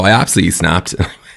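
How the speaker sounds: normal talking voice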